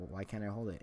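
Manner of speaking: ordinary talk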